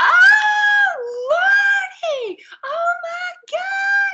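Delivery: very high, very slow, drawn-out screaming wail. Retelling how Miss Glinda reacted when her wig fell: imitating Miss Glinda screaming. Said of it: "she just started screaming".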